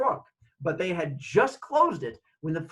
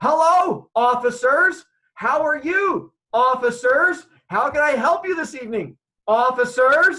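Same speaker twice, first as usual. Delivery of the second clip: deliberately really loud, slow, high, drawn-out speech; 8 semitones higher, 8 dB louder than usual. Retelling greeting officers who approach, the speaker talks really loudly. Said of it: "I start talking really loudly".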